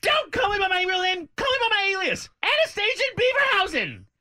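very high-pitched, loud, animated cartoonish voice. Playing an impression game, doing a bad Karen Walker impression. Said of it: "do it again one more time".

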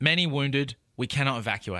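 ordinary talk

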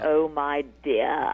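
put-on deep, old, Shakespearean English thespian voice. Retelling a really old English critic's reply, in an old English Shakespearean actor voice. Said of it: "you sound like you could be anybody from old English Shakespearean actors".

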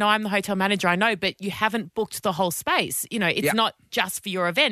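ordinary talk

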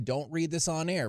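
plain

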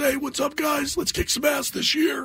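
very high, pitched way up voice. Retelling mimicking a big boss on stage: imitating boss Tom Scher. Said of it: "he talked like this".

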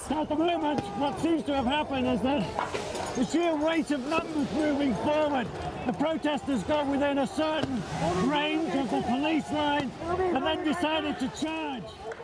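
muffled through a gas mask, urgent, pushed out.

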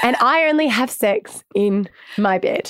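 usual speaking voice

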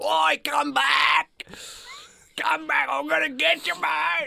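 very high, raspy, rough, drawn-out yell. Retelling how a guy on Swanson Street screamed in someone's face: imitating a stranger screaming. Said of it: "just screamed in my face".

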